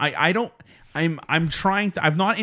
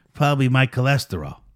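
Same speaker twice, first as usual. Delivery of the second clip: put-on Italian mobster voice, faster pace; 3 semitones lower than usual. Speaker retells greeting an Italian friend and hearing his reply, imitating Augusto. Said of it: "do your Augusto".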